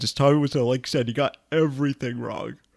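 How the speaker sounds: talking through a yawn. In a conversation with another speaker, yawning while talking. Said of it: "sorry, I'm yawning".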